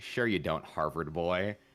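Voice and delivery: acted condescending tone. Retelling what a tour guide said to him: imitating a condescending tone. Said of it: "he said it so condescendingly".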